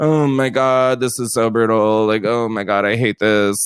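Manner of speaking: put-on drained, fed-up grumbling, low and bored. Retelling a reality show dinner scene, imitating someone bored. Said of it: "she's still sitting at that table going".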